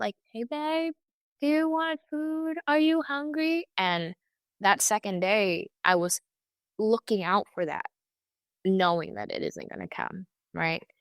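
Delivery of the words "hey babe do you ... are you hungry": mock calling voice, high and light. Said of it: "he would be yelling up".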